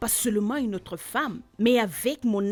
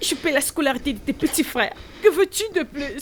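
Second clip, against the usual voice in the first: angry, worked-up, agitated voice, pitched up; 5 semitones higher than usual. Arguing with a partner while another voice keeps urging calm: agitated.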